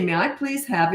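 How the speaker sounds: ordinary talk, nothing marked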